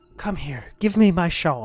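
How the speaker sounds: witch character voice. A game master speaking as the Mist Witch to a player, Mist Witch voice. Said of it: "the Mist Witch looks at that and says".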